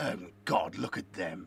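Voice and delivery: deep, very low, dropped inner-demon voice. Showing the inner voice in his head: quasi Palpatine voice. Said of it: "my quasi Palpatine voice".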